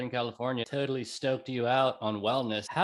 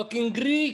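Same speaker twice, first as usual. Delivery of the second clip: very high, put-on Irish lilt; 10 semitones higher, 4 dB louder than usual. Chatting about a man from Hollywood and adding that he was Greek, Irish accent. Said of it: "I just did that with an Irish accent".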